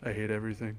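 acted flat tone, quiet, low. Retelling asking Garrett for a picture, imitating Garrett's deadpan.

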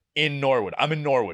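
ordinary talk, nothing marked

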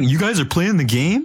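teasing, very high mocking mimicry. Mocking another speaker's question by imitating how they sound: mocking imitation of other speaker. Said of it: "That's what you sound like".

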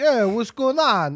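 put-on Brooklyn Italian accent. Speaker acts out vampire tokens showing up uninvited, in a brooklyn italian accent. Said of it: "Why are they all Italian?".

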